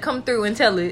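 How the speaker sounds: normal talking voice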